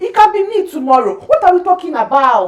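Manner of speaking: high, loud, heated outburst. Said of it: "then I get heated".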